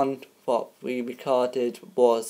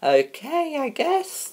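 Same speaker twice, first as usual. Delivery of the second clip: girly put-on voice, much higher. Answering when asked how she is, in a girly voice. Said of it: "Why did you do that, girly voice?".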